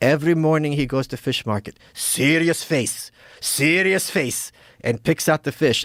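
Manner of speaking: choppy, fragmented second-language broken English. Retelling what a waitress said about the chef, imitating broken English. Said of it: "she's got her like broken English".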